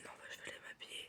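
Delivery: hushed, soft whispering voice. Talking to viewers, the speaker whispers without knowing why. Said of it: "Je sais pas pourquoi je chuchote".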